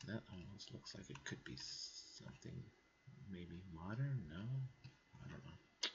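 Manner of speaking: whispered, barely audible, very quiet mumbling. Looking at Google Earth and wondering what the thing is: mumbling. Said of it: "Sorry, I'm mumbling".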